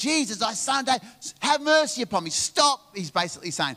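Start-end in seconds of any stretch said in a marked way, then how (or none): 0.0-3.0 put-on male yelling voice, higher. Retelling how a man who could not see cried out to Jesus: imitating a man yelling. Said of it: "he just yells it out".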